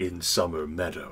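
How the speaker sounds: deep bass voice. Voicing the general describing the installation, bass voice. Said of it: "The general says in that bass voice".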